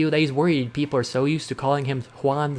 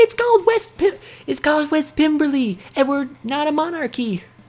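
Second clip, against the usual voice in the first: very high, tiny voice, calling up; 13 semitones higher, 4 dB louder than usual. Narrating a scene, voicing a tiny voice from the city: tiny voice shouting up. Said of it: "A tiny voice from the sh- city shouts up at you".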